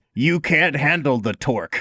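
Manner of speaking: ordinary talk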